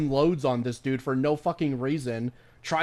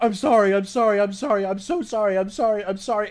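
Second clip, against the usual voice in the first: loud, repetitive voice totally falling apart; 6 semitones higher, 5 dB louder than usual. Retelling a police encounter, acting out the cop: imitating a cop breaking down. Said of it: "breaking down".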